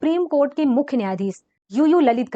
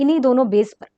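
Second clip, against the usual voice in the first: normal talking voice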